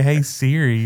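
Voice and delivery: plain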